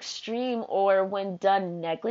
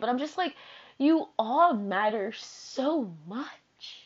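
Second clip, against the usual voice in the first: slow, choked-up voice on the edge of crying; 3 dB quieter than usual. Talking to a listener, about to start crying. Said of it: "I'm about to start crying".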